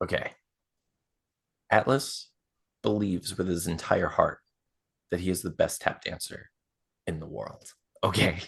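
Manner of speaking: hushed whisper. Telling a listener something so he doesn't hear, whispering. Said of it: "I'm gonna whisper this so he doesn't hear me".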